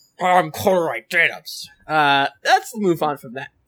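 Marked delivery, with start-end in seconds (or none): 0.2-1.7 snuffling, snorting piggish voice with pig-like snorts. Voicing the leader of Horsk again after a player asks. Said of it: "Kinda sounded like a snorting pig".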